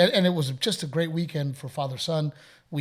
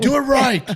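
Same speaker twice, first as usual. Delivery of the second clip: put-on high, loud, barked frustrated kid voice. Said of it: "He's like".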